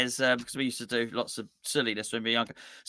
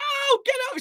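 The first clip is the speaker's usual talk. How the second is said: put-on woman's scream, higher. Retelling a game scene where an alien grabs a woman: imitating a woman screaming. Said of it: "And she's screaming".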